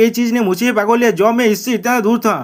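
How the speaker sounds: plain reading voice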